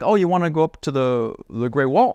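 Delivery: put-on simple broken English accent. Retelling a trip in china, quoting the bed-and-breakfast host, imitating broken english. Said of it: "he speaks like broken English".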